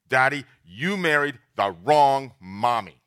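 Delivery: mock very loud, forceful, angry disapproving scolding. Father retelling how his daughter greeted him, in a mock-angry loud disapproving voice. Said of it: "she greeted me with loud, angry, disapproving voice".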